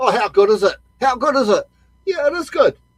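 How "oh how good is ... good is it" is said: TV commentator, carried away, overexcited and gushing. Mocking tv commentators who keep repeating a phrase: imitating an overexcited tv commentator. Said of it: "You hear certain commentators on T V going".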